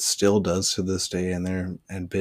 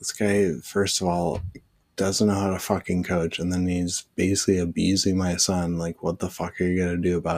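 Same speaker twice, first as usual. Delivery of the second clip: plain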